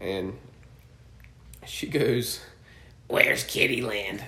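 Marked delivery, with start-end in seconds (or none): 3.1-4.2 loud, raspy chain-smoker voice. Retelling a woman's question to a cast member, imitating a heavy smoker's voice. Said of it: "that's exactly how she sounded. She sounded like she smoked 4 packs of cigarettes".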